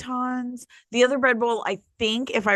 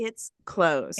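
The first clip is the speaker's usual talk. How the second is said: ordinary delivery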